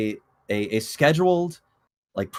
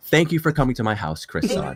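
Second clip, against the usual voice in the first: soft, polite, lower put-on voice; 4 semitones lower than usual. Speaker imagines Miyamoto hosting Chris Meledandri for tea: soft polite inside voice. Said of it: "they talk in very like inside voices like".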